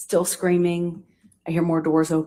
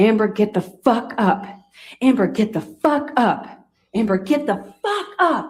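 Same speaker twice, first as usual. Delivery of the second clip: mock urgent screaming, repeated and escalating; 4 semitones higher than usual. Speaker retells a man screaming at her to get up, retelling escalating screaming. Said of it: "he's screaming it louder and louder".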